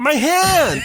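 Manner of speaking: strange, very high, loud, weird yelping scream. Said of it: "it sounds so weird".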